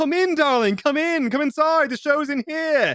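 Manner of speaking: very high, slow, over-the-top adoring gushing. Retelling how he invited a protester inside, imitating him gushing with adoration. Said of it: "nothing but pure love and adoration".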